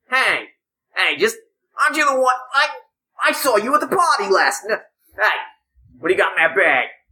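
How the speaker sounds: whiny, high, nasal, swooping, annoying voice. Describing an annoying stranger who approaches, the speaker imitates his nasally voice. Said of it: "he's got one of those real nasally voices".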